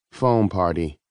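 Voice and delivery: bored, uninterested. A son answers his father's question, sounding bored. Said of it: "sounding bored".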